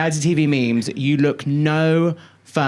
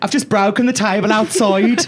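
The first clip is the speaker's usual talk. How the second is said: put-on high-pitched Brummy accent; 6 semitones higher, 3 dB louder than usual. Speaker retelling a Big Brother moment, quoting a housemate: Alison's Brummy accent. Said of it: "I'm trying to do a Brummy accent".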